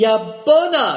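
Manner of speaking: glad, high, loud, joyful exclamation, cried out. Cymbeluk reacts to Moonlight's news about leaving the castle, a joyful cry. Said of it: "cried Cymbeluk joyfully".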